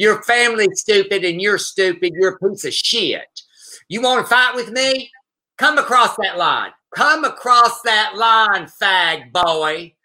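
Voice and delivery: mock rural Southern accent. Retelling a fight they watched, the speaker imitates the woman's redneck accent. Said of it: "I'm going to do her accent".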